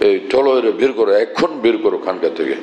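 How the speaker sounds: ordinary talk, nothing marked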